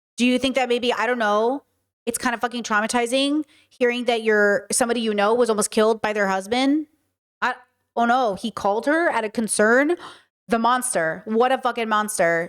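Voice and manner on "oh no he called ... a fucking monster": normal talking voice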